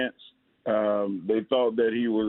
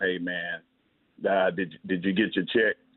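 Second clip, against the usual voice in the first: put-on calm voice, lower pitch; 4 semitones lower than usual. Describing how their mentor Earl Campbell calms them when frustrated, in a calm Earl Campbell impression. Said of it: "he got the calmest voice".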